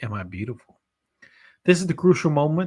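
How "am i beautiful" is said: spooky, chilling whisper, lower pitch. Reading a ghost legend aloud, voicing the ghost's question: chilling whisper. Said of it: "she'll ask in a whisper that chills you to the bone".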